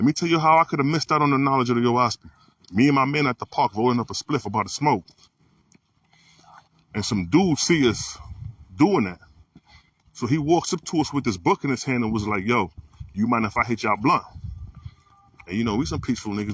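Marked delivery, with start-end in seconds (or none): 12.5-14.2 put-on light Caribbean accent. Retelling a stranger at the park asking to share: imitating a light Caribbean accent. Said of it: "a little Caribbean accent".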